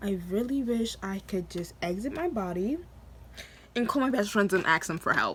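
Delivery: ordinary delivery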